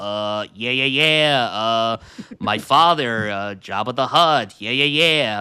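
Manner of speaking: plain natural voice, slow with fillers.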